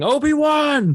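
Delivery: enraged, very high-pitched, angry scream. Retelling the scene as Darth Vader, mad again, screams after the departing Obi-Wan: Darth Vader screaming.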